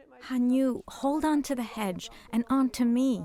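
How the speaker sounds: plain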